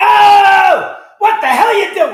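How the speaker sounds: loud, shrill belted delivery with the oh stretched. Doing a string of comedian impressions: Sam Kinison impression. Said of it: "let's not forget Sam Kinison".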